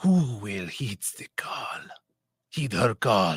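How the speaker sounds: French accent with a Middle Eastern tinge. Play the narrator of a book you are making up, in a sneaky Middle Eastern in France accent. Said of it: "this is my um sneaky Middle Eastern who snuck into France accent".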